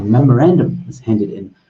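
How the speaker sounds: normal talking voice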